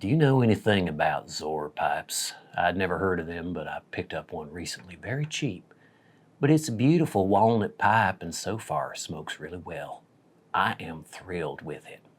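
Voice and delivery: put-on low, soft, deep Southern accent throughout. Reading a viewer's message aloud as requested, in a deep Southern accent. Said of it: "in a deep Southern accent".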